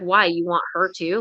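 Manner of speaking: sassy, pissed-off, snappy delivery with attitude. Retelling own angry reply to a man's questions: retelling own line with attitude. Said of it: "with an attitude".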